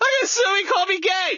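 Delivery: high, shouted mock wail of outrage.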